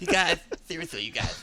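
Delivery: put-on cartoon child voice. Voicing a game hero while joking with the others: Cartman voice. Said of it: "You just made Master Chief sound like Cartman".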